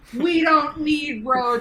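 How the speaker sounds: slow, loud, confident, sure delivery.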